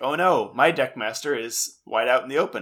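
ordinary talk, nothing marked

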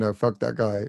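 plain

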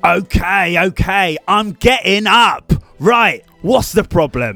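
put-on a bit of an East London accent. In a scene about oversleeping and being late, in an east london accent. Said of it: "You've gone a bit East London there".

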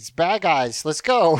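normal talking voice

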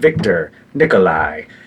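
put-on Russian accent, broadcast radio announcer voice. Retelling what a voice on a radio station says: imitating a Russian radio voice. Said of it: "in a Russian voice and is like".

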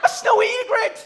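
high, loud, excited call.

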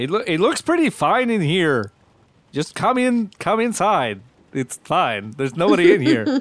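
hollered, swooping call. Calling in character from a window for the others to come inside: yelling. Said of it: "are you just yelling?".

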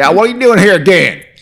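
shrill, high, loud, put-on Southern drawl. Imitating a person on Cops whose door is burst open: put-on Southern accent. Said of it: "we gotta stop doing Southern accents".

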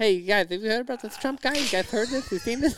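very high, chatty stand-up comedian patter. Imitating how a stand-up comic always opened his bits: mocking imitation of a stand-up comic. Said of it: "I mock him in my set now".

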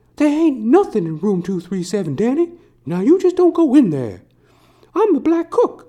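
very high, loud, swooping put-on cook voice. Retelling the cook talking to Danny: Scatman Crothers impression. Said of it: "Scatman Crothers".

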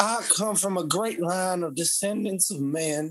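put-on bygone 1800s Louisiana plantation owner accent. Teasing the other speaker about their accent, the speaker mimics an 1800s plantation owner accent. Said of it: "the whole like 1800s plantation owner accent".

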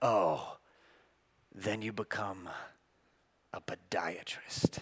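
deep, soft, very low, slow and drawn-out. Telling a story about the residency match, imitating how they said it. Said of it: "And the way they said it was like".

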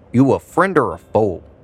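ordinary talk, nothing marked

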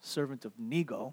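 barely audible, very low, hushed mutter. Acting out a young captive renaming himself: muttering under his breath. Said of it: "he mutters under his breath".

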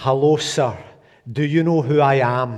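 put-on Scottish accent, best effort. Retelling a man greeting a veteran, in a scottish accent. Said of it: "in his best Scottish accent".

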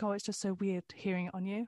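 plain

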